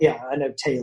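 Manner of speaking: ordinary delivery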